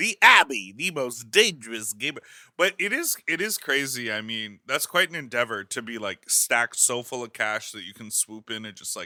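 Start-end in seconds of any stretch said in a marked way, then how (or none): 0.0-2.2 loud, raised, artificial AI voiceover voice. Speaker does a quick bit in an AI voice. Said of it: "it's that A I voice".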